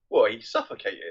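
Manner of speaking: mock sullen, petulant, sulky, pouting tone. Retelling a character's excuse after the others look at him incredulously: imitating a sulky reply. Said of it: "purses his lips like a sort of sulk".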